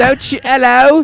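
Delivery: bad put-on British accent. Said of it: "I'm not good at accents".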